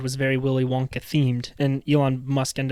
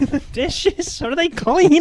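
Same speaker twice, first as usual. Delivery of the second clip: put-on yelling, higher pitch and louder; 5 dB louder than usual. Retelling a mom yelling down during podcast filming: imitating mom yelling. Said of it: "my mom just yelling down".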